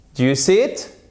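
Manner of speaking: rising tune on final word it. Teaching yes-no question intonation, rising intonation on final it. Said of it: "Là, ça monte pour la dernière, pour la seconde".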